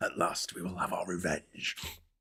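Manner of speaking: breathy, whispered character voice, barely voiced. Joking about a croaky voice after clearing the throat: Darth Maul voice. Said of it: "bit Darth Maul".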